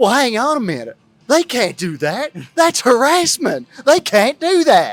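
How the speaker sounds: put-on Southern accent, very loud, high, shrill, swooping. Retelling what the guy from Kentucky said: imitating a Southern accent. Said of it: "first time I've ever heard a Southern accent".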